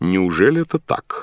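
ordinary delivery

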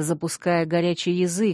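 plain reading voice

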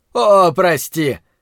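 scornful, mocking, jeering, taunting sorry. Narrating a fight, the attacker taunts the choking narrator: mocking. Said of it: "насмешливо проговорил он".

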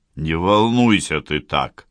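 plain reading voice

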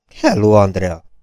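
plain

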